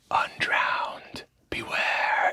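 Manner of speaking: whispering voice. Narrating a game, the speaker voices a voice heard in your mind: whispering voice. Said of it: "(as whispering voice)".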